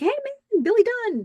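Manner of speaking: play-acted, very high, chuckling delivery. Retelling how one man greeted another backstage: retelling a laughing greeting. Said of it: "He's laughing".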